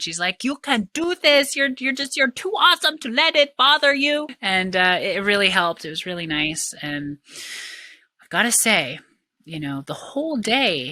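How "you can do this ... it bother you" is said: put-on cute French accent, high and raised in pitch. Retelling a French girl's pep talk to the speaker, in her cute French accent. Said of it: "she's just in her cute accent".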